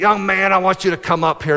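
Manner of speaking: voice like a lifelong chain smoker. Recalling the first time Cletty called them up, doing Cletty's heavy-smoker voice. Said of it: "he talks like he smoked like 5 packs".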